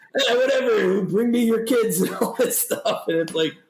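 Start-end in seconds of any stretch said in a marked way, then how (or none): 0.1-2.0 creepy, high-pitched tone. Acting out a man in a video: creepy Uncle Ernie type voice. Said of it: "like a creepy, ... Uncle Ernie type guy".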